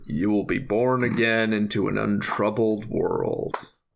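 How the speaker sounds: deep, low, slow, deliberate voice. Retelling a movie scene, doing a Leonard Nimoy impression. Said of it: "let me try and do an impression".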